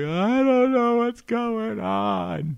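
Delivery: breaking down crying, very high, very slow wail. Retelling how Jonah broke down after being yelled at, imitating Jonah crying. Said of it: "Jonah breaks down in tears".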